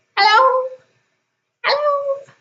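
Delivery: very high, squeaky, tiny fish-like creature chorus. A game master voices creatures answering a player's bellow, in tiny fishy creature voices. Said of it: "a chorus of tiny fishy and crustacean-y voices".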